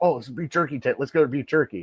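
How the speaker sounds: put-on eager excitement. Retelling his wife spotting a beef jerky tent, imitating her excitement. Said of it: "she got all excited".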